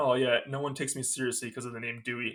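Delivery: normal talking voice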